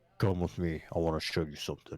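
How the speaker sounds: very deep, low bass voice. Acting out his imagined self inviting someone to come along, in a real deep voice. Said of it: "Then a real deep voice just be like".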